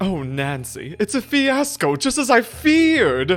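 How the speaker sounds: high-pitched, swooping whine, very slow and drawn out. Doing a requested impression of Taylor Sinclair: Taylor Sinclair voice. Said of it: "a little bit of uh, Taylor Sinclair".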